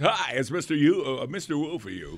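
radio disc jockey voice. Asking another speaker if they used it, then performing the line in a disc jockey voice. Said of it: "Did you do the disc jockey voice?".

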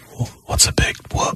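soft, voiceless, laughing whisper.

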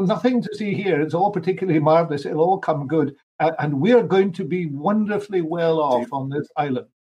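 ordinary delivery

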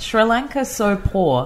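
slow, deliberate, careful read-out. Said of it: "do you want me to say it slowly again".

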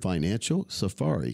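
slow, carefully spaced, slowed-down words.

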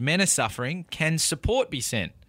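ordinary delivery

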